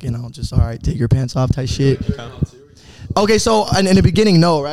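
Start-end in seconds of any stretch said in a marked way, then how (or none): 0.5-1.5 put-on whisper, lower. Retelling own words from a recorded lesson: imitating own whisper. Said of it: "I just kinda whisper into it".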